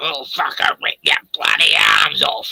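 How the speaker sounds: very low, rough, gravelly macho he-man voice. Imagining how the person in a photo talks: very male gravelly voice. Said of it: "a very male, gravelly".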